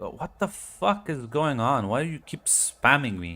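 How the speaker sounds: high-pitched, very annoyed outburst. Imagining a sister's reply to repeated messages, mock-annoyed reply. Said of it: "your sister would reply with like very annoyed".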